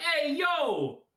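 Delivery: put-on New York accent. Voicing Richter in a game: New York accent as Richter. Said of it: "a New York accent".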